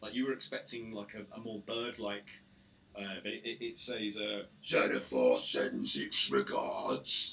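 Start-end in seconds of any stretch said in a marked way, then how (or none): 4.6-7.3 very low, heavy, slow orc-like monster voice. Voicing a creature in a tabletop game, deep orc-like voice. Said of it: "so it says in a deep voice, uh, which sounds more like an orc".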